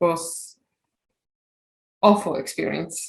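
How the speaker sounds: audible distress, upset voice. Describing being alone in a hospital bed after surgery: audible distress in voice. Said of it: "I can hear it in your voice as well".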